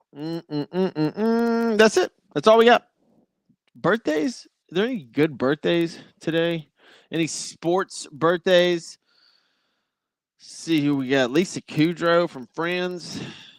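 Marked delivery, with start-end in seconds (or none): 10.4-13.2 voice drifting into a country accent. Host reading out today's birthdays on a sports show, country accent. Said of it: "I just went into a country accent".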